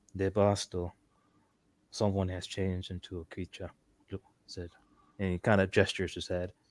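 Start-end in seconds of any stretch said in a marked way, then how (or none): 0.2-3.8 hushed, quiet tone. Game narrator voicing a man getting a woman's attention, in a hushed tone. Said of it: "He says in a hushed tone".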